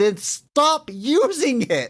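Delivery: very high, slow, drawn-out exasperated voice. Retelling a movie line after someone keeps bashing explosives: imitating a frustrated line. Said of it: "that frustration".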